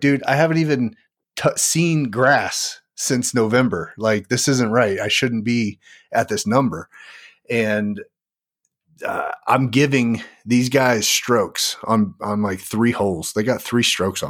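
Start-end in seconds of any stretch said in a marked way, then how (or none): none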